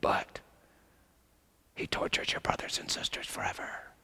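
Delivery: soft, breathy, hushed whisper close to the ear. Acting out what the evil one whispers to believers: imitating Satan whispering. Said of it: "and then he whispers".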